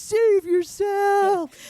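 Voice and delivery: mock over-the-top screaming, pitched very high. Retelling a movie scene where the characters start screaming: imitating Tommy screaming. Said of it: "they start screaming and Tommy's like".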